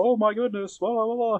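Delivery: very high, forced, put-on announcer voice. Mocking how many wrestling commentators sound: imitating an announcer voice. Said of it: "put on their announcer voice".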